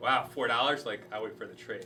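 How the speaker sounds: ordinary delivery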